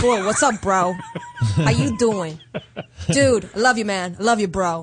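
put-on Bronx accent, buddy-style bro talk. Showing how they talk to their brother, in a Bronx accent. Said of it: "I'm from like the Bronx".

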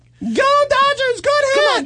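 very high, very slow, drawn-out cheer. Retelling how a man held up a puppet: imitating a puppeteer's cheer. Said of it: "like this".

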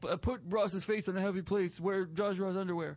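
put-on tough guy voice. Pitching a radio show ad in an impression: Big Tony impression. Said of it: "That's my Big Tony".

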